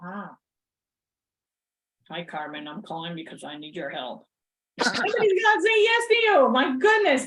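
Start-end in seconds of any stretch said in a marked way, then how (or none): 0.0-4.2 cranky, grumpy, put-upon voice. Showing how a sales phone call sounds when made grumpy: mock grumpy tone. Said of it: "But if you're all grumpy".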